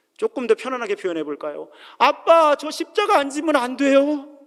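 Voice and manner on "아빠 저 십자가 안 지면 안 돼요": very high-pitched, drawn-out, tearful crying wail. Showing listeners how Jesus prayed to his Father, imitating someone crying out in prayer. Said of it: "울면서 / 그렇게 아우성을 치셨다는 거예요".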